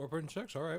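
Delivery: talking with mouth full. Speaker giving a rating mid-bite, talking with mouth full. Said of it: "Sorry, I got the mouthful".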